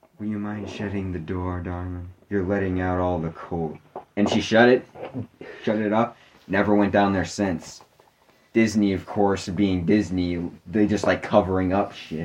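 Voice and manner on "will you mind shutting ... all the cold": soft, eerie, unsettling creepy voice. Retelling a story about Ida hearing a voice in a room; imitating a creepy voice. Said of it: "there was this creepy voice that said".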